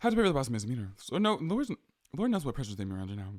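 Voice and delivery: fast, rushed newscaster reading. Reading a text aloud as fast as possible, fast newscaster reading voice. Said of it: "reading really quickly as a newscaster".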